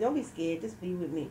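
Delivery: ordinary talk, nothing marked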